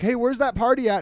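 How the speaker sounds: ordinary delivery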